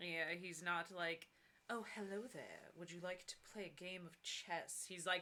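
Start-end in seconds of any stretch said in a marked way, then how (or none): 1.7-4.8 put-on posh, intimidating upper-class British accent. Describing how a character does not talk, in an intimidating fancy British accent. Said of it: "intimidating fancy British accent".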